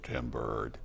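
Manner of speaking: low, soft, put-on deep voice, as deep as possible. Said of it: "in my deepest fifteen-year-old voice".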